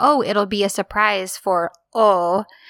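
normal talking voice

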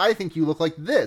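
ordinary delivery

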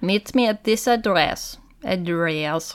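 bad put-on Polish accent. Acting out what someone said in a retold story: bad Polish accent. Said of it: "I'm not a bad Polish accent. Sorry".

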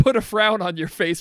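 ordinary talk, nothing marked

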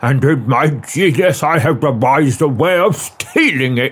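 ordinary delivery, nothing marked

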